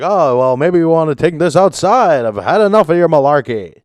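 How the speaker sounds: forceful, high, loud delivery. Retelling a video where a politician confronted a union worker: imitating Joe Biden. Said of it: "he's like".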